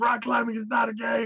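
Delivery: very high, acted-out, lecturing-toned yell. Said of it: "yelling at this new girl".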